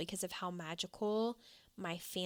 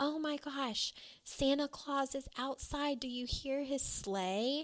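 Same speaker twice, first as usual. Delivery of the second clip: high, hollered, far-carrying call; 7 semitones higher than usual. Oma calling down to the kids in the basement: imitating someone hollering. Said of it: "my Oma would holler down".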